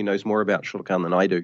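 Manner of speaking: ordinary delivery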